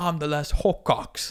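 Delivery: put-on slow, amped-up, laid-on-thick British accent. Quoting a movie line, amped-up British accent. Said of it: "amp up the, the British".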